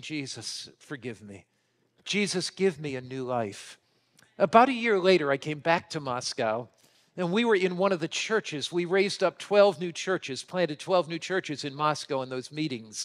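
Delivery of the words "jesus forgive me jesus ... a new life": put-on tearful voice, quieter and slower. Retelling a scarred man kneeling to pray that night, imitating tearful prayer. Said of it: "knelt with tears in his eyes saying".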